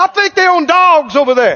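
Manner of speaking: attitude-filled mocking tone. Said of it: "With attitude, he goes".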